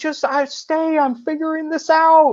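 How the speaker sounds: very high, broken-off, halting movie-role voice. Describing a film character, imitating Owen Wilson. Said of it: "That's a good impression".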